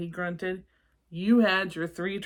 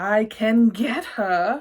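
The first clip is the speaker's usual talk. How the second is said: very loud, hissing monster voice; 3 semitones higher, 8 dB louder than usual. Narrating a story, a tentacled character answers a request to get Emma to sleep: Vladimir's hissing voice. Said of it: "he hissed".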